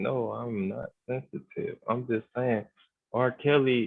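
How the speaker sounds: soft, deliberately calm tone. Responding to another speaker, in a deliberately calm voice. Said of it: "let me talk in my um calm voice".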